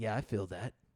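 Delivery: deadpan, flat, completely emotionless delivery. Mocking V's flat delivery to friends: emotionless V voice. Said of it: "he has no emotion".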